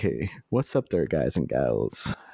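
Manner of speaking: silky, smooth, put-on radio DJ voice. Joking about a second voice change: put-on smooth radio voice. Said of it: "We're gonna go smooth A S M R radio".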